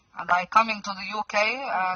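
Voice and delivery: put-on Arabic accent. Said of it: "I can do the accent like Waleed".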